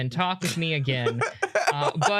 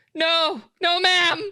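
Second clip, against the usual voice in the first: very high, scared-stiff, terrified stammer; 11 semitones higher, 4 dB louder than usual. Asked by a woman whether he is old enough, the boy answers, terrified. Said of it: "deer in headlights, terrified".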